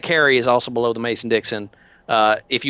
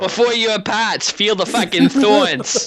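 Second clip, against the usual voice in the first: higher-pitched put-on Boston accent; 10 semitones higher than usual. Repeating the other player's line for a joke: Boston Christopher Walken voice. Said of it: "Boston by way of Christopher Walken there".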